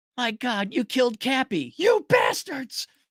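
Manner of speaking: high, slow outraged shouting cry. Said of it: "Kenny the Messenger from South Park".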